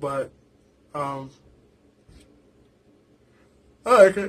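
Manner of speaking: speaking through a yawn. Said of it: "Sorry for the yawning".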